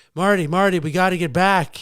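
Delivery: play-acted, screamed, insistent and urgent. Acting out an imagined scene with a friend dressed as Doc Brown: Doc Brown screaming. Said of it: "Doc screams at, at, at, at me".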